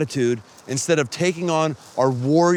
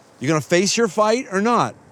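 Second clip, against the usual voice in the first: ordinary talk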